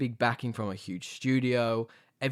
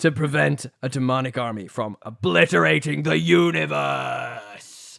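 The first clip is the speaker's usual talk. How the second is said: put-on dramatic, epic movie-trailer narrator voice; 3 semitones higher, 5 dB louder than usual. Reading a series synopsis aloud to another speaker: Epic Voice Guy voice. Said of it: "Here's Epic Voice Guy".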